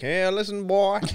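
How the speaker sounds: shrill, very loud, high belted Southern accent. Imagining a comic book arch nemesis, doing a Colonel Sanders accent. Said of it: "Here's the accent".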